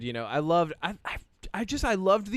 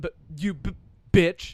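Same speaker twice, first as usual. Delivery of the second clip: put-on stuttering android voice, higher and louder; 3 semitones higher, 5 dB louder than usual. Quoting a movie line the way Andy said it: imitating Andy's stutter. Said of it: "He stutters".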